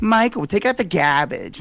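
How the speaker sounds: put-on Boston accent. Quoting a grandmother from the Boston area, in a Boston accent. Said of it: "Mike does a pretty good Boston".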